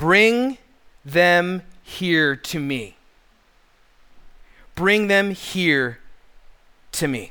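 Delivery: mock fatherly voice, slow and unhurried. Reading Jesus's reply to the disciples' excuses: imitating Jesus's fatherly tone. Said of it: "in a very fatherly tone".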